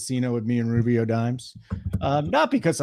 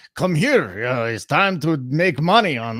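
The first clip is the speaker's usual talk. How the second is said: raised voice with a put-on Russian accent; 3 semitones higher, 5 dB louder than usual. Retelling a skit where a masked man enters, russian accent. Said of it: "I do it in a Russian accent".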